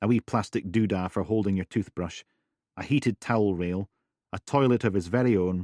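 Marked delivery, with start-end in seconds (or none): none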